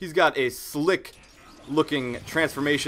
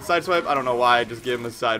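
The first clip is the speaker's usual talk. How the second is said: ordinary talk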